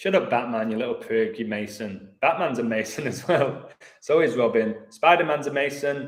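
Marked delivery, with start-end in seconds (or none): none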